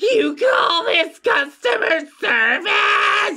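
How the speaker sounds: monstrous demonic shout, very high, very slow, drawn out. A narrator voices a creature calling out in a store, in a demonic voice. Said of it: "Her demonic voice calls out".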